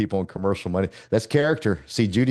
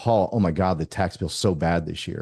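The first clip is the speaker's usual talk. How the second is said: mock weepy, sobbing, tearful, distressed crying voice; 3 semitones lower than usual. Retelling a woman's tearful phone call to him; imitating someone crying. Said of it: "She was in tears crying".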